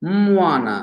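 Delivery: moana: mo pitched high, ana dropped low. Explaining tone tiers with an example word, moana high then low tone. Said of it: "with a high tone on the first syllable and a low tone on the second syllable".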